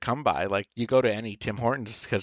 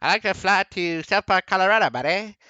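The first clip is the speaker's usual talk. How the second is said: put-on Canadian accent, spoken up high and raised; 9 semitones higher, 5 dB louder than usual. Retelling a South Park episode, the speaker does Ike asking for a flight, Ike's Canadian accent. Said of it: "And he's going".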